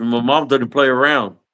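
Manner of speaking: usual speaking voice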